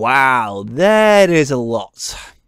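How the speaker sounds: very slow, loud, drawn-out sarcastic amazement. Reacting to a low power reading on screen: sarcastic. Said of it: "just note the sarcasm in that".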